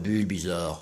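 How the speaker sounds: big deep voice.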